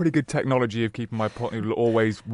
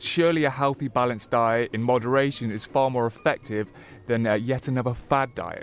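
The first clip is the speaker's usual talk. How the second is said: ordinary talk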